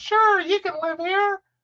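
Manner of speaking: very high-pitched, mocking Valley Girl voice. Mocking roommates who say yes without discussing it: mocking Valley Girl voice. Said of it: "I know I'm making fun of Valley Girls".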